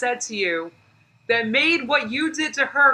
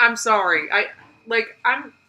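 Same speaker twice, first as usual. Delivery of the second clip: ordinary delivery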